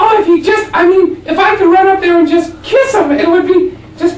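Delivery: put-on very high, loud woman's voice, Buffalo, New York accent.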